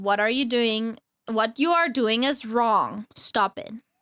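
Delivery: very low, clearly enunciated scolding voice. Speaker recreating how they used to scold their younger brothers, in a very low, clear voice. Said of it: "I would put a very low voice, start speaking very clearly".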